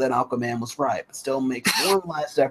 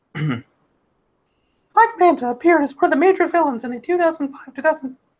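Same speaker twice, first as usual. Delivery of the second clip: very high, loud, cartoonish put-on voice; 6 dB louder than usual. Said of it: "I can't even do that voice".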